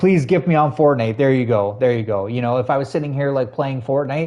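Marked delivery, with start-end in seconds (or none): 0.0-1.2 playful, jokey, fake pleading and begging. Joking about begging Dizzy for a gift: mock begging. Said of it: "I beg Dizzy all the time".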